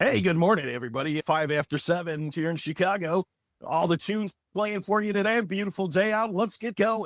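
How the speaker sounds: mock radio announcer voice. Asked to give his radio voice, the speaker launches into a radio dj voice. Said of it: "give us your radio voice".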